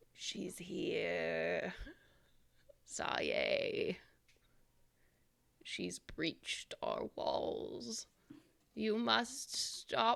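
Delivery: quiet, husky, cracked voice. Voicing a hanging figure warning the party: husky, quiet, cracked voice. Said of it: "in a husky, quiet, cracked voice".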